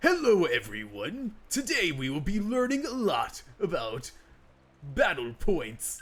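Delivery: high, throat-straining put-on character voice. Showing the voice used for the big dude in Pokemon: Xavier Renegade Angel voice. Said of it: "Xavier Renegade Angel voice".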